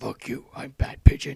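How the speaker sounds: deep, very loud bellow. Acting out a talking pigeon in the park: deep Batman voice. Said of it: "had really deep voices like Batman".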